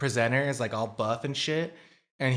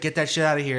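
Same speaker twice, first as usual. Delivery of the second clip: mock angry, loud yell; 4 semitones higher, 4 dB louder than usual. Retelling how a man opened the door on the camera, imitating an angry yell. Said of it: "he's like all pissed off".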